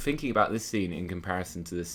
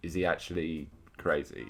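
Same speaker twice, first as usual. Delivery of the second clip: ordinary delivery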